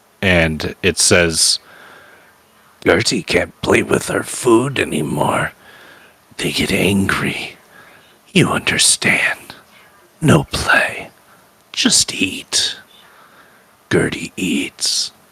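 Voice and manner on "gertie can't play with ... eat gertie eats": throaty, guttural, breathy whispered monster voice. Voicing a thing heard over sounds of bones cracking, in a guttural voice. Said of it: "it's a guttural voice".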